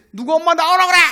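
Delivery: put-on piercing, very loud, shrill drunken bellow. Retelling how a drunk husband yelled for his wife during dawn prayers; retelling a drunken yell. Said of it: "막 소리 지르면서".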